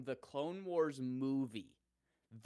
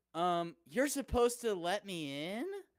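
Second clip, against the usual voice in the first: high, slow anime voice, rising at every line end; 5 semitones higher, 5 dB louder than usual. Imitating how she talks when smooth-talking someone, in an anime voice. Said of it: "that's more anime voice".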